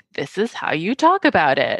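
ordinary delivery

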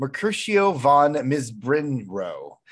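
normal talking voice

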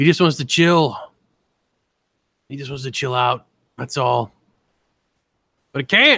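cartoonish mad scientist voice. A speaker riffs in a voice his listener says sounds like Rick. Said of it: "You sound like Rick from Rick and Morty just now".

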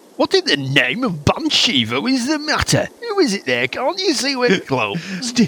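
put-on very high, swooping generic northern English accent. Narrating a scene, voicing someone answering a knock from an upstairs shutter: generic Northern English accent. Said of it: "You've reverted to Yorkshire".

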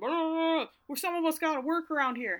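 put-on shrill, very high screaming rant. Retelling how Dad screamed at him: imitating Dad screaming. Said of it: "Dad starts screaming at him".

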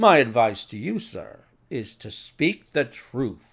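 ordinary delivery

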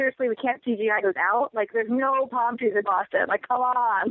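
ordinary talk

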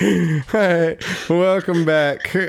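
utterly beaten, defeated tone, very slow. Restarting the recording after a break, saying welcome back: defeated welcome back. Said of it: "That's like the most defeated, like, welcome back".

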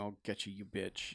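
hushed, very quiet, tearful sobbing. Retelling a scene where she lies on the floor: imitating Celeste crying. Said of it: "on the floor crying, going".

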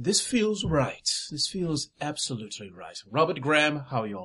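snooty, haughty fake quasi-British accent. Voicing a new character stepping out of the dressing room: haughty fake british accent. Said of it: "haughty, uh, uh, quasi-British accent, like he's kinda faking it".

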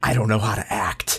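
acted-out mock whisper. Retelling a film-set story, acting out one actor whispering to another. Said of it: "just whispers to him".

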